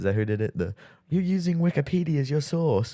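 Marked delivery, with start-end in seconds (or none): 1.1-2.9 bad, fake British accent pitched very high. Quoting a line Henry Cavill said: bad British accent. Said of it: "I'm doing a bad attempt at a British accent".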